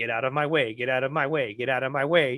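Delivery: low, mechanical robot voice. Speaker retells a comedian's bit, doing his impression of Tinder. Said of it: "he was like a robot comedian".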